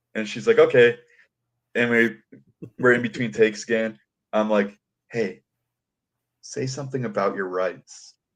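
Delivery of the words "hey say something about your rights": quiet, soft whisper under the breath. Between takes, the speaker retells whispering a suggestion to her: whispering. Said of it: "I'm kind of like whispering these things to her".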